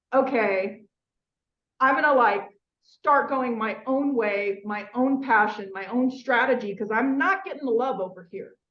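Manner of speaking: ordinary delivery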